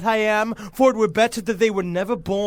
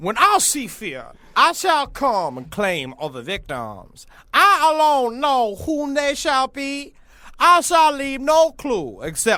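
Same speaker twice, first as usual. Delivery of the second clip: put-on old-fashioned dialect, sing-song; 5 semitones higher than usual. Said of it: "read it in proper, uh, dialect of the time".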